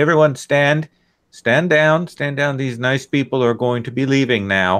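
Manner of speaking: very loud speech. A character orders everyone to stand down, speaking very loudly. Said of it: "he will speak very loudly and say".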